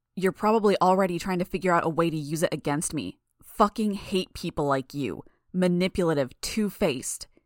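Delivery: ordinary delivery, nothing marked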